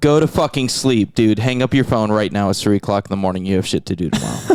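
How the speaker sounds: mock, put-on sergeant-style delivery. Retelling standing up at three in the morning, called Sergeant: retelling own order to sleep. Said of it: "I was like".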